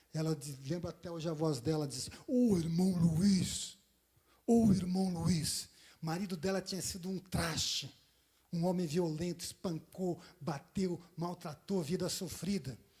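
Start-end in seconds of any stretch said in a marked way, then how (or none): 2.2-5.6 thick, deep-throated woman's voice, drawn out. Imitating Nerina calling out to Brother Luiz, in a deep voice. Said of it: "ela tinha uma voz grossa".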